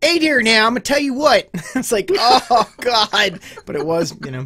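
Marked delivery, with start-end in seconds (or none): 0.0-1.5 put-on quick, rattled-off Baltimore accent, pitched up. Showing how an accent meant to be Scottish turned into a Baltimore accent impression. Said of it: "It turned into a Baltimore accent".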